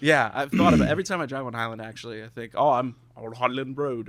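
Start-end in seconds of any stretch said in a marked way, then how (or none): 2.6-4.1 slow, unconvincing put-on Scottish accent. Joking about driving on Highland Road: attempted Scottish accent. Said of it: "or whatever Scottish people say".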